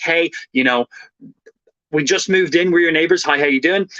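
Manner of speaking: usual speaking voice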